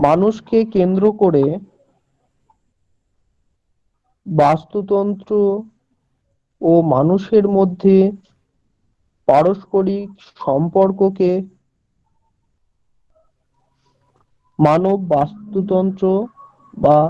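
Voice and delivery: slow, dictation-like pace. Repeating a definition after students ask for it slower: slow dictation pace. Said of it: "একটু আস্তে আস্তে বলেন sir".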